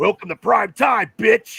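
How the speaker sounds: loud, menacing horror-villain voice. Speaker recounting a favorite horror movie moment, doing a Freddy Krueger impression. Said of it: "that was my impersonation of Freddy Krueger".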